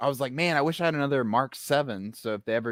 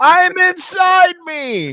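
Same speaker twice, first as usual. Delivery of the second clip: very high, very loud, shrill shrieking scream; 10 dB louder than usual. Retelling a scene where a character falls on a trophy: imitating a scream. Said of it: "he screams out".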